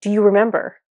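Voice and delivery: mock insistent, demanding delivery. Retelling a god's question in a crown vision: imitating a demanding question. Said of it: "almost demanding it".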